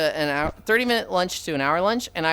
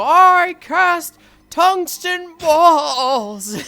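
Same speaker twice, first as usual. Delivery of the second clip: quavering wizard voice, very high, slow and drawn out; 12 semitones higher, 9 dB louder than usual. Quoting a wizard from Wizard Arena casting a spell: imitating a wavering wizard voice. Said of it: "He just fucking wavers when he says it".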